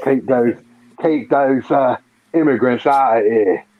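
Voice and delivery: mock London Cockney voice. Joking about uk immigration officials in a cockney accent. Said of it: "you sound like this Cockney".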